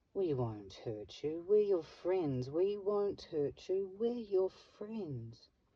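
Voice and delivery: high, syrupy sweet, sugary coaxing voice. Narrating a story, the leader of the lies speaks to the penned boy and fox, syrupy sweet voice. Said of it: "said in a syrupy sweet voice".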